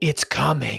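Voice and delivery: rasped-out, possessed-sounding voice. Narrator reads a woman's line in a second-person story, rasping. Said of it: "she rasps out".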